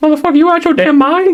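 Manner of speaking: put-on high-pitched voice. Retelling a movie scene where a shot character yells: imitating a high-pitched voice. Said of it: "this high-pitched voice".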